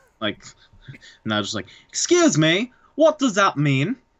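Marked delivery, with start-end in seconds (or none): 1.9-4.0 bad British accent, pitched much higher. Retelling how Nigel reacts to the line, horrible Nigel accent. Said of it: "That was a horrible Nigel accent".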